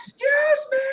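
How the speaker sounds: very high-pitched, grating, annoying voice. Imitating the annoying catchphrase yell: Vickie Guerrero voice. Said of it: "with the voice".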